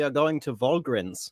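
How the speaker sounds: comedic put-on German accent. Asked by another speaker to do a bit in a German accent: German accent. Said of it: "you do a German accent".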